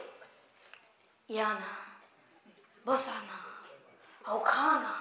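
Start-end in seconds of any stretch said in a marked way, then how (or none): 1.3-4.9 speaking very softly, much softer, hushed voice. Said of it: "ती एकदम हळू बोलते".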